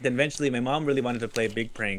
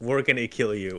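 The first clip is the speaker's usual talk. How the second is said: usual speaking voice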